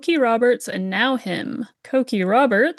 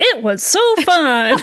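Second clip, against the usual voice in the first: loud, squeaky cartoon-style voice; 4 semitones higher, 5 dB louder than usual. Asked for overall thoughts, [name] says it was fun, a little like Mickey Mouse. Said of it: "like a little Mickey Mouse on that".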